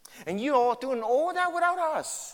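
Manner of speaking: play-acted gushing, slow, swooping sarcastic tone. Explaining a passage about a church, the speaker acts out his sarcastic praise. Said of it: "you know that's all sarcasm".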